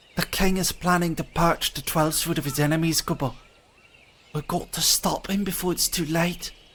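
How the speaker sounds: put-on loose, relaxed Scottish accent. Reading a fairy-like game character's lines aloud in a kind of Scottish-ish accent. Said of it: "I give them a kind of Scottish-ish accent".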